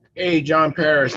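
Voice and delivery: loud, high-pitched yelling, calling out.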